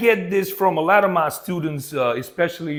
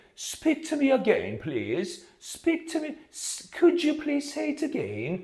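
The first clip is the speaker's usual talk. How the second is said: put-on very British accent, very high and soft; 9 semitones higher, 6 dB quieter than usual. Explaining how people pronounce the word 'again', demonstrating a very British accent. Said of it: "It's super British".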